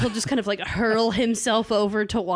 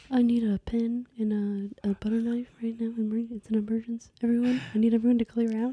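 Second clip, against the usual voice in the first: put-on whispering voice. Imitating Liv Tyler giving orders in an emergency: Liv Tyler whisper impression. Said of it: "who's gonna whisper through all of the emergencies".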